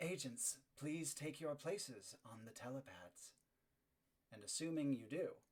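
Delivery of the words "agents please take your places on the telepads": quiet, soft, detached, disembodied voice. Voicing a disembodied voice telling agents to take their places: quiet disembodied voice. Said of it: "a disembodied voice says quietly".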